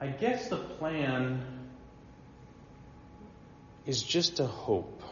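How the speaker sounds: acted, very uncertain, soft, breathy, drawn-out voice. Quoting how a man concludes his argument, mimicking an uncertain voice. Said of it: "in this really uncertain voice".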